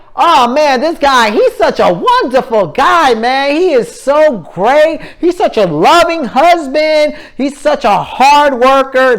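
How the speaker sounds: insincere sweet gushing. Explaining sarcasm, acting out people praising a man: mock praise said loudly. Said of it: "They're saying it loudly".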